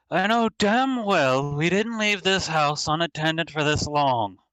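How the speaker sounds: very loud, booming call. Game narrator voicing a voice echoing from the house's central hall, very loud voice. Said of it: "And in a very loud voice".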